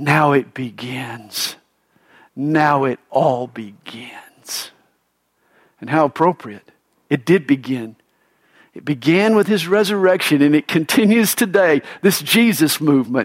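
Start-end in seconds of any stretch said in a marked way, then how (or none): 0.0-4.7 quiet, drawn-out whisper. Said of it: "he whispers to himself".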